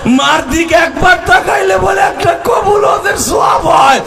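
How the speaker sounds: high, shouted, weeping lament.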